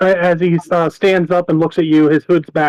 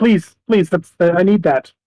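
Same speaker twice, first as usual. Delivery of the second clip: pleading, begging halfling voice. Voicing a halfling who sees a player grab his flute: pleading halfling voice. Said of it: "he sees you grab it, and he's like".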